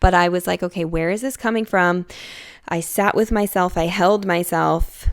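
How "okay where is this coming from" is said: normal talking voice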